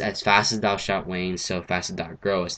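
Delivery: ordinary talk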